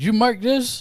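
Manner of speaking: very high, very loud, shrill, mouth half full mid-bite. Speaking to the cook while eating, talking with a half-full mouth. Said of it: "I will say to August with a half full mouth".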